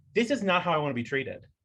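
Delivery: ordinary delivery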